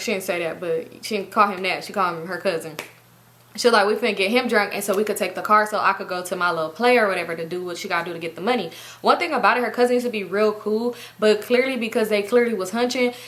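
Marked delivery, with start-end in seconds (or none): none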